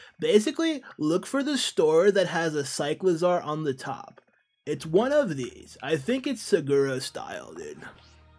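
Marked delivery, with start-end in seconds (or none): 5.8-7.8 silly, goofy, dumb put-on congested voice. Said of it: "we're getting raided when I'm doing a dumb voice".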